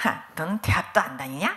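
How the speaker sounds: low sneering scoff. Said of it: "이러면서 저를 비웃는데요".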